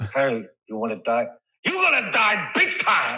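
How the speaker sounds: high, swooping, wide-pitched, toothless-sounding voice. Riffing on impressions with a co-host, the speaker launches into an Al Pacino impression. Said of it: "Do a Al Pacino".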